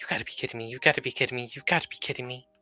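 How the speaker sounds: hushed whisper. Voicing a character hiding her face from a man: whispering to herself. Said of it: "whispering to herself".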